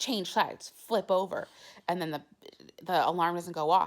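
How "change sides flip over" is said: ordinary talk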